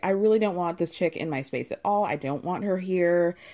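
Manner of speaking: ordinary talk, nothing marked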